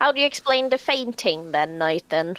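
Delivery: put-on British-accented delivery. Quoting how a woman says a name when she's annoyed with him, in a British accent. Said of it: "I just sounded so British in the way I said Nathan".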